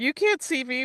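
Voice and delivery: high, childish, put-on little-kid toddler voice. Mocking a character's denial as a toddler would: imitating a toddler. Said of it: "It's the toddler going".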